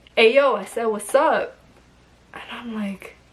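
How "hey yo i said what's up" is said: put-on New York street accent, man's voice. Retelling a man calling out while the speaker kept walking, in a New York accent. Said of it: "that sounds like a New York man".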